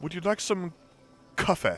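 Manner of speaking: over-the-top put-on British accent. Describing an American woman teaching people a British accent; her put-on British accent. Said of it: "trying to teach people how to do a, a British accent, and she keeps like going like".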